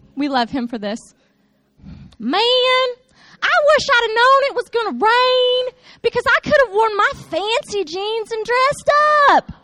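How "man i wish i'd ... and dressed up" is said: put-on high-pitched, sweet twang with a southern US accent. Doing Parker's accent so the listeners understand how he talks, in Parker's sweet southern twang. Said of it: "I have to do the accent so you guys understand how Parker talks".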